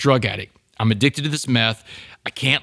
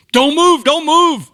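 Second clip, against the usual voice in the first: shrill, very high, full-volume scream; 9 dB louder than usual. Retelling a police raid, imitating a cop screaming at the top of his lungs. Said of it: "he's screaming at the top of his lungs".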